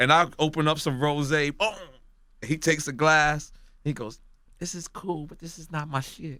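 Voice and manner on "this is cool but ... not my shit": very quiet, hushed, softly spoken superstar-style voice. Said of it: "I don't know why I put the [name] voice on".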